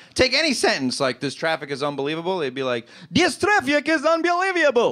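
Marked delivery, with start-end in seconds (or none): 3.2-5.0 very high put-on Russian accent, y-sounds slipped in. A speaker showing how Russians would say a sentence, in a Russian accent. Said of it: "the Russian accent".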